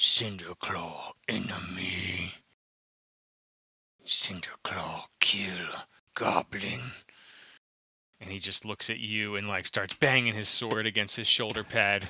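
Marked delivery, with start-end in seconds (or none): 0.0-6.8 deep, guttural, broken goblin speech with stretched words. Voicing a goblin commando speaking to a player in guttural Goblin. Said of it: "like, guttural Goblin".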